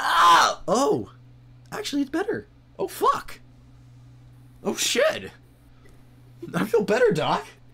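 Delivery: very high, squeaky voice swinging and swooping around. A patient being healed by the doctor reacts to the treatment, extremely high voice. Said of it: "you see the buffest fucking person you've ever seen in your life, but with the highest voice you've ever seen. / you see the buffest fucking person you've ever seen in your life, but with the highest".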